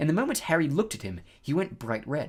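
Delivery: plain reading voice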